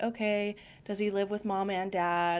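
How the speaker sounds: ordinary delivery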